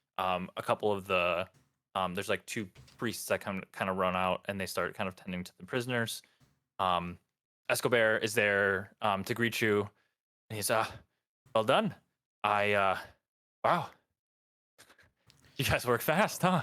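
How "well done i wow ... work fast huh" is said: pleased, impressed, very happy and delighted. Voicing Escobar greeting the group at the keep: very happy. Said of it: "he seems very happy".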